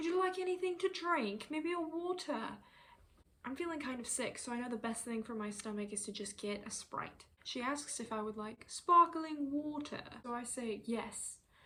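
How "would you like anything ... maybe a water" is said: put-on European accent, pitched up. Retelling what the flight attendant asked him on a plane, imitating a European accent. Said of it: "she goes in her European accent".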